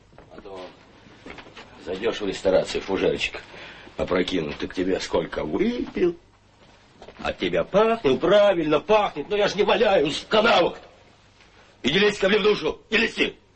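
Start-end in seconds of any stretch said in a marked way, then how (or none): 8.1-13.4 agitated, worked-up outburst with very high voice. One character answers another in a scene, worked up. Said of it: "что ты разволновался-то?".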